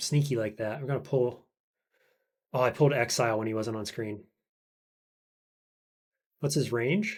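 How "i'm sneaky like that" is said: ordinary talk, nothing marked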